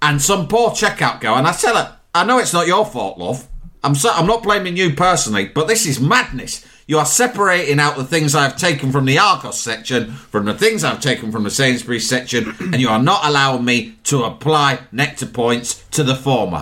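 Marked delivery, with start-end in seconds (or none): none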